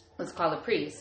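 ordinary talk, nothing marked

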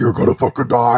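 put-on outer-space alien creature voice. Imagining aliens arriving, a speaker shows how they all sound: alien voice. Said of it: "They all sound like".

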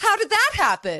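very high put-on conservative church-lady voice. Asking a question in character: playing old Republican church lady.

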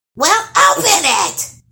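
very high, loud, sharp snapping voice. A hag to the trolls after a voice speaks from the trunk: snapped. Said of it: "the hag snapped".

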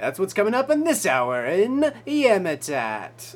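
very loud, booming, swooping radio announcer voice. Host previewing what's coming up this hour, in a radio announcer voice. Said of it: "That was my radio announcer voice".

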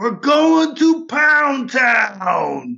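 very high, very slow, drawn-out shouted line. Yelling a character's line after being asked to yell: character yelling. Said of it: "hold it out away from you and then yell".

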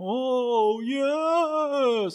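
very high, creepy, drawn-out "yes". Imitating a wrestling manager's catchphrase: creepy Paul Bearer voice. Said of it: "he sounded so creepy".

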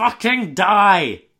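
loud drawn-out yelling.

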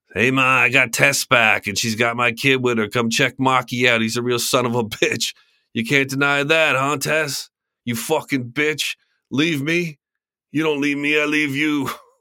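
clumsy put-on New Jersey accent. Doing a man calling to Ma about Tess and the kid: shitty Jersey accent. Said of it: "screw around with my shitty Jersey accent again".

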